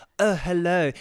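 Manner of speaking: loud, affected posh voice. Imitating a man's friend who has the same voice: imitating the same posh voice. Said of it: "He's got the same voice too".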